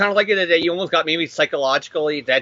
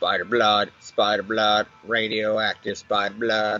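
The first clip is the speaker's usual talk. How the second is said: dead, flat, very low monotone; 8 semitones lower, 4 dB quieter than usual. Imitating an intro voice actor told to be more monotone: monotone voice-actor read. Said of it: "We need a little more monotone".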